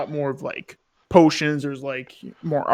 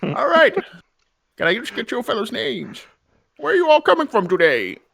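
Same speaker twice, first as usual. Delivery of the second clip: put-on whimsical, high, swooping old codger character voice; 9 semitones higher, 4 dB louder than usual. A player asks the group their names and where they're from, in an old codger voice. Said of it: "old codger voice".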